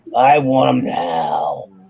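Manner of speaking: low, put-on wrestling promoter voice. Retelling how you had to demand your books, going down to your Vince McMahon voice. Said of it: "I had to go down to my Vince McMahon voice".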